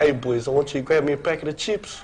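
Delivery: New Zealand accent throughout. Repeating a set phrase on cue during accent practice, kiwi accent. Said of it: "you've got to do it in the Kiwi accent".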